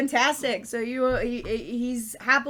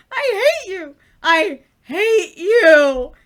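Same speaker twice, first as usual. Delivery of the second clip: very loud, very slow, stretched, shrill voice; 7 semitones higher, 11 dB louder than usual. Narrator voices the player's old nemesis after an insult: nemesis character voice. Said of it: "who do you see walking out of the library but your old nemesis, [name]? / He says the exact same thing when he sees you. / who do you see walking out of the library but your old nemesis".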